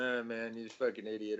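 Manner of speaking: normal talking voice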